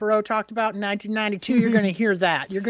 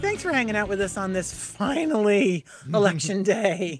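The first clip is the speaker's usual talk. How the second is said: voice breaking slightly mid-line. Radio host welcoming listeners back on election day, voice cracking a little. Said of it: "did my voice crack a little bit there".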